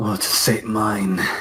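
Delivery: low, slow demonic voice. Voicing Azric as he turns to both of them, in Azric's low demonic voice. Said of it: "Sort of lower my voice, put on a little accent".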